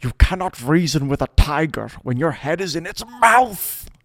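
very high-pitched, loud, screamed-out outburst. Retelling a film scene where Churchill screams at his cabinet: imitating Churchill screaming. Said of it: "in the most Churchill-y way, he just screams out".

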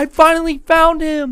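mock tearful, slow, sobbing bawl of relief. Retelling his mom on the phone with police when he came home, imitating her sobbing. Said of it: "she starts sobbing, bawling her eyes out".

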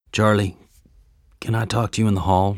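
sheepish tone. [name] speaks to Charlie, sheepish. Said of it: "[name] asked sheepishly".

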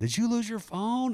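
shrill, very high, screeching scream. Retelling a phone call from a lady in an amusement park, imitating her screaming. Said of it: "She's screaming".

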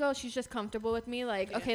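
ordinary delivery

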